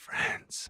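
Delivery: very quiet, hushed whisper. Answering a question about friends in character: whispering. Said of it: "Why are you whispering that?".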